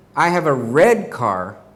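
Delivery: word "red" strongly stressed, punched out. Showing that the car is red, not blue: stress on red. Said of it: "I wanted to make sure that you knew my car was red, not blue".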